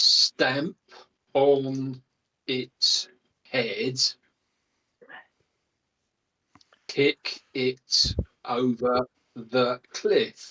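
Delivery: slow, drawn-out delivery. A player speaking in character during a tabletop game, talking slowly. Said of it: "Why are you talking in such a slow way?".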